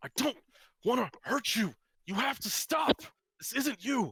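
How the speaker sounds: very high, loud shout. Narrating a scene in second person, voicing Lucas shouting. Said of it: "Lucas sh- shouts".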